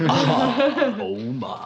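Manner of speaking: ah stretched out long, very high and very loud. Joking that a sick voice sounds like George Takei: George Takei voice. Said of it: "I have turned into George Takei".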